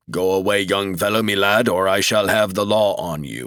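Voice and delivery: deep, low, rumbling robot voice. Narrator reads a robot guard warning off a young man, deep rumbling robot voice. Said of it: "The robot had a deep, rumbling voice".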